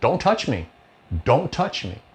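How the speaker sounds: forceful, insistent, very emphatic, said twice. A man in a car warns the approaching security guard, retelling emphatic words. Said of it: "very emphatically says".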